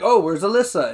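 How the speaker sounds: ordinary delivery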